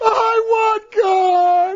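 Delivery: acted, very high crying plea, "want" stretched. Retelling crying out on an airplane: retelling own crying plea. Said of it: "and I started crying".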